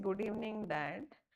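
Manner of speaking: plain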